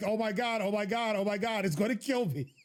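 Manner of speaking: terrified, breathless-sounding, frantic panicked cry. Talking about a game monster, describing running around in panic: mock panicked screaming. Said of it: "I'm going to run around screaming like".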